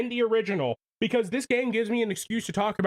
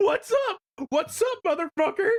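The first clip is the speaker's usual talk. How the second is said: cartoony voice, pitched very high; 10 semitones higher than usual. Replaying something from last year, the speaker does a Shaggy voice. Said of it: "you hear the Shaggy voice".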